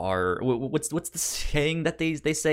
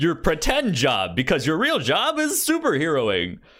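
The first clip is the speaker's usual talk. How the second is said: high character voice with wide pitch swings; 6 semitones higher, 3 dB louder than usual. Retelling the Tick correcting Arthur: Tick voice. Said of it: "He's like".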